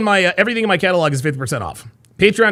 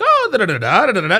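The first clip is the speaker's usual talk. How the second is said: mocking, put-on, passive-aggressive, polite teacher inflections; 3 semitones higher than usual. Mocking how someone sounds when being polite: mocking her civilized tone. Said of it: "she's like".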